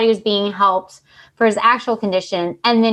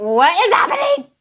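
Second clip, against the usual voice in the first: high, squeaky, confused puzzled dog voice. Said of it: "Clue's like".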